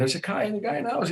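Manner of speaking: play-acted very high, frantic, berserk screaming. Speaker retells a man on the couch thinking he was a burglar: retelling a scream. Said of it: "he's screaming".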